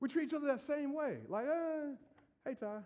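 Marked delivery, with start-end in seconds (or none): 1.5-2.8 unimpressed, bored, unexcited, seen-it-all tone. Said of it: "treat each other like we've seen the movie".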